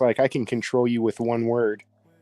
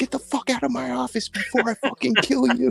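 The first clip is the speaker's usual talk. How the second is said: put-on enraged, rough, furious yell shrieked very high; 13 semitones higher than usual. Retelling what a woman said in her office, imitating an angry woman. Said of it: "man, she was angry".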